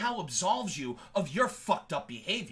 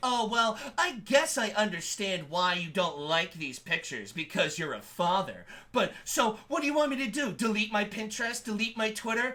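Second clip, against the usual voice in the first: acted-out condescending, patronizing, talking-down tone. Retelling how Raven talked to Sai: imitating Raven's condescending tone. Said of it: "The condescending tone in Raven's voice".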